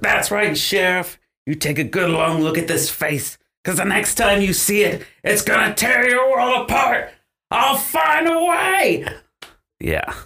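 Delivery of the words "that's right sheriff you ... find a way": very high scream, rising and climbing. Playing Jack before a huge crowd, turning on the sheriff: Jack screaming at the sheriff. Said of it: "Let me get my screamer".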